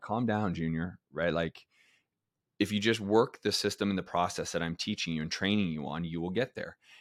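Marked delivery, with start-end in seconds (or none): none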